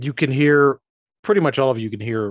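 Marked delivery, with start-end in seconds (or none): none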